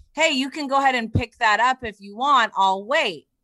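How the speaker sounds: pushy, challenging, aggressive confrontational tone. Retelling what a random man said to her from his stopped car, imitating an aggressive tone. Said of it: "kind of in an aggressive tone".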